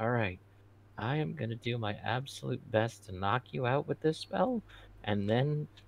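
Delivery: muttered under breath. Secretly telling the prisoner the plan: under his breath. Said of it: "under my breath".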